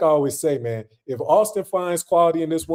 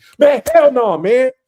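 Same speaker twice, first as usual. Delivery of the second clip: all-out, very loud, high-pitched shout; 8 semitones higher, 9 dB louder than usual. Speaker ranting about a woman sent back to her village, shouting. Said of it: "Let me stop shouting".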